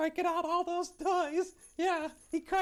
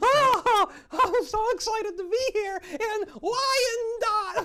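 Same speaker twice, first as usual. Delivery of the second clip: put-on enthusiastic elf voice, higher and louder; 4 semitones higher, 8 dB louder than usual. Playing an elf guest greeting a show host: put-on enthusiastic elf voice. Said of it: "you are enthusiastic".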